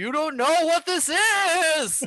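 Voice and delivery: very high, slow, stretched, eerie spooky ghost voice. Speaker retelling a character's plan to scare the guards, pretending to be a ghost. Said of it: "pretend like there is a ghost".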